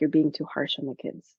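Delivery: acted whispering voice. Retelling what the husband comes over and whispers: imitating husband whispering. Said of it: "whispers to me".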